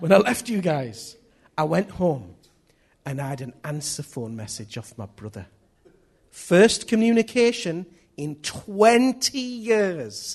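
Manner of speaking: very loud, bouncing put-on old Scottish accent. Retelling what an old Scottish man said to two men, in a put-on Scottish accent. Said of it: "This is my Scottish accent now".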